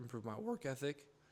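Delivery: voice suddenly breaking partway through. Speaker explaining how they see a job, voice cracks. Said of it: "that voice crack".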